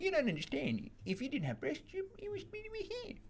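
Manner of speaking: put-on tiny, very high, soft, swooping baby voice. Retelling your own reply to a woman, slip into an Adam Sandler-like little baby voice. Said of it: "Why are you Adam Sandler again?".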